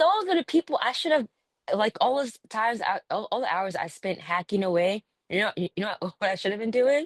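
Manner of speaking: tripping over words, stumbling, stuttering restarts. Reflecting on what they should have done with people offering to buy, stuttering. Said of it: "I'm like stuttering".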